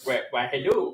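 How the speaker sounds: cartoon dog character voice. Greeting a tiny fairy in a roleplay scene: Scooby-Doo voice. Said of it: "I just immediately went into Scooby".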